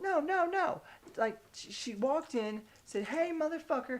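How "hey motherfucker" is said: high, shrill, piercing tone. Retelling what a half-orc woman said as she walked in, high, shrill voice. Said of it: "in a high, shrill ass voice".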